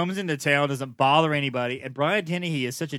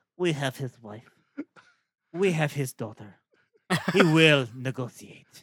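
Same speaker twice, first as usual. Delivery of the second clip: bad, unconvincing, put-on Russian accent. Retelling a scene from a movie: bad Russian accent. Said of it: "I like your Russian accent".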